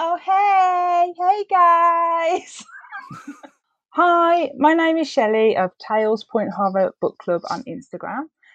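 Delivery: very high American accent, long drawn-out "hey". A book club host tries out a practiced American accent. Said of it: "I've been practicing my American".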